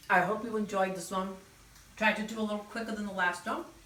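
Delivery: talking with full mouth. Speaker wraps up a video while still eating a fritter, talking with mouth full. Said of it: "Let me swallow my zucchini fritter".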